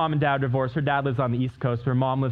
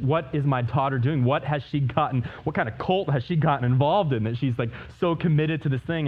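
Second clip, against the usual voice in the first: ordinary delivery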